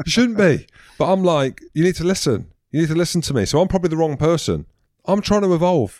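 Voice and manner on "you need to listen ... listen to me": mock exasperated, fed-up shouting. Retelling telling the kids off: imitating own shouting. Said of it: "my go-to is shouting".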